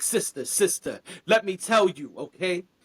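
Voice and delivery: preachy, sermonizing, lecturing tone. Retelling a stranger who walks over to lecture about bacon: imitating a preachy stranger. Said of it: "the guy who sees some bacon on your plate and walks over and he's like".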